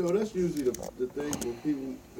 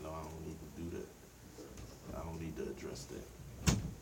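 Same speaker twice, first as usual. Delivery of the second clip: low, slow, soft, calming voice.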